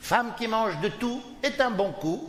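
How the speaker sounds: slow, high-pitched mock Chinese accent.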